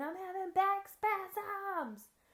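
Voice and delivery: very high-pitched, shrieking scream. Retelling a woman who fell to the ground: imitating someone screaming. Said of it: "and starts screaming".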